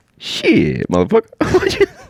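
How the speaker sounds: very high-pitched caterpillar voice. Showing what you think a common caterpillar would sound like, do a Katt Williams-style caterpillar voice. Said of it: "do an impression of what you think that caterpillar will sound like".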